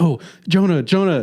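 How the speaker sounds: excited calling out. Retelling calling to someone sitting behind during a trailer, retelling excited calling. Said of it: "and I'm excited".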